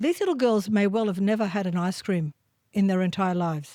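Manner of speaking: usual speaking voice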